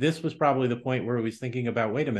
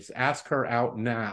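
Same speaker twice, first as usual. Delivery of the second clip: put-on stern teacher voice. Quoting advice from a fourth-grade teacher, imitating a stern teacher voice. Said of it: "in her stern teacher voice".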